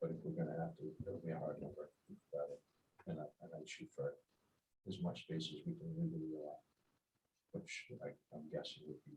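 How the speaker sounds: too quiet to hear, inaudible.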